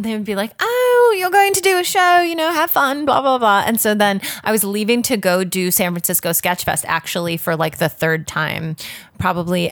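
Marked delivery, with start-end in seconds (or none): 0.6-3.6 very high-pitched, rich upper-class British voice. Retelling what the rich employers said about the show: imitating rich british employers. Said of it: "when I do an impression of them".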